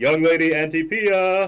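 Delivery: very loud, very high, slow and drawn-out yell. Voicing a character entering a homestead and calling out: yelling. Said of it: "start, uh, yelling".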